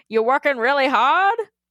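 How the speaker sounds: loud, funny put-on old-school cowboy voice. Reading out an email, voicing the old school cowboy boss: funny old cowboy voice. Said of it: "You did a funny voice, so I guess I have to as well".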